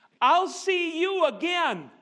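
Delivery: put-on accent from Venezuela. Leaving a hotel in the morning, retelling a woman's parting words: Venezuelan accent. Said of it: "that Venezuelan accent".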